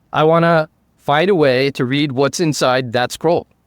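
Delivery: ordinary talk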